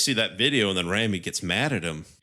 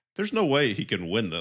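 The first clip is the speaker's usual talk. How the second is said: normal talking voice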